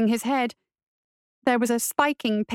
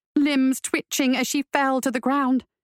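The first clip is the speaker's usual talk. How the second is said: ordinary delivery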